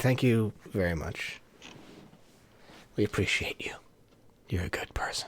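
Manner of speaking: very hushed, soft, breathy whisper. Thanking a viewer for staying in chat: whispering. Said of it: "I don't know why I'm whispering that".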